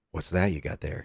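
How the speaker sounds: put-on emotionless voice. Retelling what a stranger in the immigration line asked: imitating an emotionless voice. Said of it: "he has, like, no emotion when he's talking".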